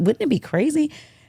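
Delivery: whispering voice. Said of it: "I whispered to her".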